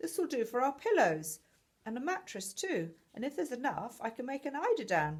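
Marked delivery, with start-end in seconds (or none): none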